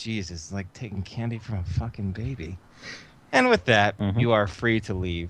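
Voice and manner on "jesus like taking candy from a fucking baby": very quiet, hushed mutter under the breath. Voicing a power armor pilot after taking the credit chip: muttering under his breath. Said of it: "You even hear under his breath".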